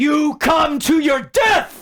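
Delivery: very high, loud shouted battle yell. Voicing a warrior shouting at enemies in the mist: character yelling a threat. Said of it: "he just yells out to whatever".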